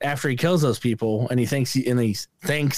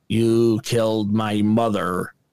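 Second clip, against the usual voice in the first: strange, off-kilter, slow, mannered movie-style delivery; 4 semitones lower than usual. Retelling a movie scene in a prison cell, imitating a weirdly delivered line. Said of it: "That's how he says it".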